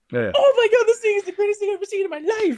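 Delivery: rapid, frantic, high-pitched, loud gushing. Imitating a reviewer gushing about a movie: imitating Bum Reviews, rapid insane pace. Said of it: "Bum Reviews is like".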